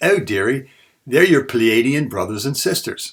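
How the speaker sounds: put-on high, loud British accent. Speaker retelling the channeled being's answer to their question, in Kendra's British accent. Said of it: "in her British accent".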